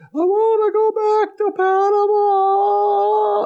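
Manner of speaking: very high, very slow blubbering whine-crying. Retelling a scene where she starts crying in the car: mock whine crying. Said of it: "whine crying".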